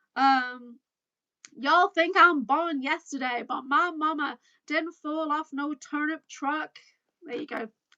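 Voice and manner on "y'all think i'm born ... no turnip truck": put-on Texas accent. Attempting a phrase she never gets right, in a put-on Texas accent. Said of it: "I'm trying to get my Texas accent going... I'm trying to do that phrase".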